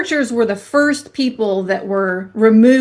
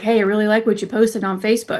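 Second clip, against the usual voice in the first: mock whispering; 3 dB quieter than usual. Retelling how the pastor whispered during church services: imitating a whisper. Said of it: "whispering in my ear".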